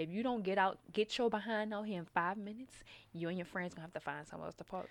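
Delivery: soft yet stern, scolding motherly voice. Reading out a parking text message the way they heard it, in a motherly voice. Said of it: "I just heard it in like a motherly voice".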